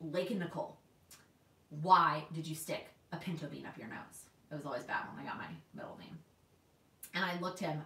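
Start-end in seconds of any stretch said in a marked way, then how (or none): none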